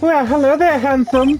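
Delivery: ditzy voice pitched very high. Voicing characters in a story, the speaker gives April May a ditzy voice. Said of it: "give April May a bit of a ditzy sort of voice".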